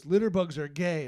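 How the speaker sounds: very loud, bellowing yell. Retelling a parking-lot encounter, the speaker quotes a man in a truck, retelling a yell. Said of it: "he yells out".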